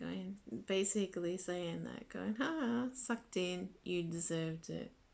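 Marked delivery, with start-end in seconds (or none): 2.3-4.9 play-acted gloating, mocking jeer through laughter. Retelling how Kim reacted to the speaker getting hurt: imitating Kim laughing mockingly. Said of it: "Kim just laughing".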